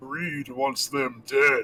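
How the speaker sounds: throaty, guttural demon voice. A game master voices a creature crying out and pointing at two players, in a guttural demonic voice. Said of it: "in his guttural demonic voice cries out".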